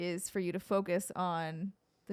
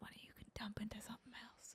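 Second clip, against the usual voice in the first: hushed, breathy, barely voiced whisper; 3 semitones higher, 20 dB quieter than usual. Making a point about resources to another speaker, whispering. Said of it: "I don't know why I whispered that".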